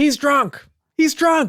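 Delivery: very high, slow, drawn-out tattling voice. Acting out a wife telling the officer about her husband: imitating a wife snitching on husband. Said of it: "And then the wife says".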